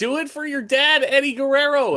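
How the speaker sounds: put-on very high, loud shouted yell. Retelling one's own earlier yell: imitating own yell. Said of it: "I was yelling".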